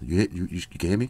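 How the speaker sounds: soft, half-whispered voice. Checking whether the listener can still hear him: half-whispering. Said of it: "I'm whispering right now".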